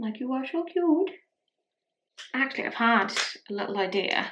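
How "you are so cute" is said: high, cutesy pet-talk voice. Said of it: "That's how I talk to the cats".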